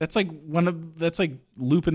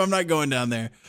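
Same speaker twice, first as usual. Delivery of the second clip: ordinary talk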